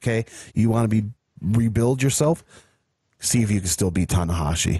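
ordinary delivery

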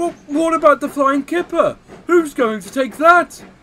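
very high, loud, argumentative, arguing back tone. Narrator reads Henry the engine answering his fireman: arguing. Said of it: "argued Henry".

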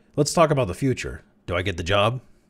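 ordinary delivery

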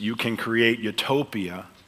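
normal talking voice

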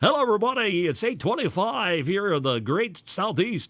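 over-the-top hyping radio voice. Demonstrating the over-smiling on-air hyping style called a yucker. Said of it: "that's called a yucker".

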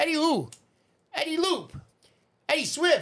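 Italian-American accent, put-on. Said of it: "like a Joe Pesci".

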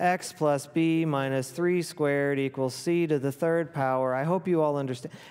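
dull, lifeless, flat, passionless droning monotone. Mimicking how a teacher talked in class, mock flat, passionless delivery. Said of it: "where your teacher talked like this. ... There's no passion behind it".

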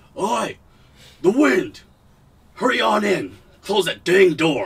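loud dwarf voice hollering. Game master voicing dwarves as the players push the door open, in a dwarven voice. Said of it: "you hear dwarven voices go".

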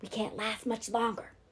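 whispering. Jem, while the children hold Dill up to the windowsill, whispered. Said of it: "Jem whispered".

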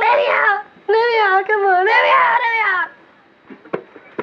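tiny little voice, very high and very slow. Telling a story, voicing a trapped spirit calling out: little voice. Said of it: "he hears this little voice".

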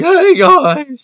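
very high, very loud voice with cracking. Ranking cartoon characters on a tier list, doing a High Five Ghost voice. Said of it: "always voice cracking and stuff".

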